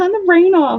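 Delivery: very high, screeching, screamed cat voice. Retelling how the cat screams to turn the rain off: imitating a cat screaming. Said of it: "he screams at me".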